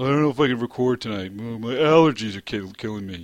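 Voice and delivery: whiny complaining voice. Mocking the two others for complaining today: imitating someone complaining. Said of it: "the both of you complaining today".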